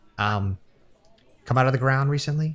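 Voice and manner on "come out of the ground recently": hushed whisper, higher. Voicing a character who quietly asks the players a question: whispering. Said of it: "He kinda whispers it to you guys".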